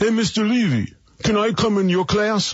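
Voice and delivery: very high put-on Brooklyn accent, schoolkid-like voice. Recalling kids talking to his teacher father, the speaker is imitating a Brooklyn accent. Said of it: "I'll throw my best Brooklyn accent in here".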